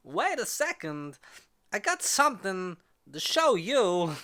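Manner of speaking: high, slow, deliberate delivery. Leading into something to show: Christopher Walken voice. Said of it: "as Christopher Walken would say".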